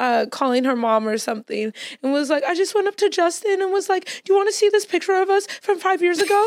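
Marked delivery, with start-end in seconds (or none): 2.4-6.5 tearful, high voice, talking while crying. Retelling a fan's call from a video: imitating someone crying. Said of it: "She was crying".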